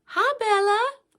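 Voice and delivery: very high, cheery, bright, upbeat voice. Showing how to say a pet's name when interacting with him, in an upbeat happy tone. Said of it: "say his name in a kind of an upbeat tone".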